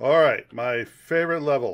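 sarcastic tone. Playing a game on stream, reaching a level; sarcastic. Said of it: "I'm being sarcastic".

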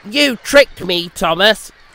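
huffy, huffing in annoyance. Narrator reading a story, Percy speaking to Thomas: huffy. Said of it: "huffed Percy".

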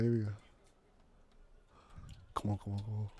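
whispered, barely audible. Urging the others on during a tense moment in a challenge: whispering. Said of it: "Why am I whispering right now?".

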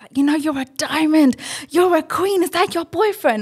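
play-acted, high-pitched shouting at top of lungs. Recalling a man who came over at the gym, retelling a top-of-voice shout. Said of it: "he's like at the top of his voice".

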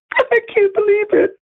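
very high, tearful crying voice. Speaker who says they got suckered, crying. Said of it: "And I'm crying because it's just unbelievable".

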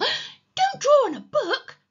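very high-pitched, loud, squeaky cry. A boy protests as another boy grabs a pencil to draw on a book, squeaking. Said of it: "squeaked Peter".

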